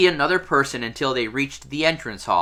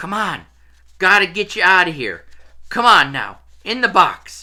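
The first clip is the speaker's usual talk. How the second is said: hoarse, husky whisper, much higher pitch; 4 semitones higher than usual. After a door creaks open, someone speaks in a hoarse whisper. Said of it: "someone speaking in a hoarse whisper".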